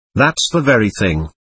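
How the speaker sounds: ordinary delivery, nothing marked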